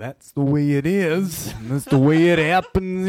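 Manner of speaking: slow, loud, growling voice belted out. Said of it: "Like the man would have said".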